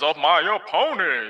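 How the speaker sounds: fake fairy-tale giant voice. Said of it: "he ain't gotta sound like a fee, fi, fo, fo".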